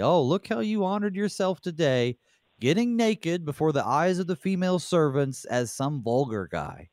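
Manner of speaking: scornful sarcasm. Paraphrasing a Bible verse spoken by Michal: imitating Michal's sarcasm.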